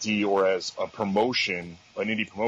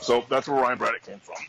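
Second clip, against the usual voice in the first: usual speaking voice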